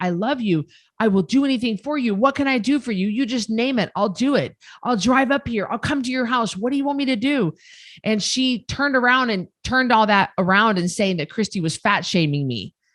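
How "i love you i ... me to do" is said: desperate, imploring, heartfelt begging tone. Retelling own words to a loved one: retelling a desperate plea. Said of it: "I was desperate. I was saying".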